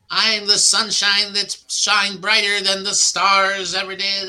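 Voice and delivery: loud, high, boastful wrestler promo voice. Describing a wrestling character speaking into the camera, imitating a wrestler's promo voice. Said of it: "he talks like this".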